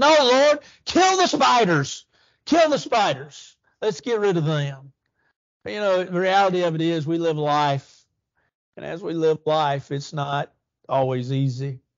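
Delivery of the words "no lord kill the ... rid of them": high, swooping shout. Retelling a church member interrupting a prayer: retelling a shout. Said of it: "he shouted out".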